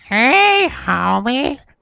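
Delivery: very high, swooping cartoon housewife voice. Podcaster offering to stand in if the show's voice actors die, Marge impression. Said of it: "That was my best Marge".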